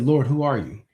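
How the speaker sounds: ordinary talk, nothing marked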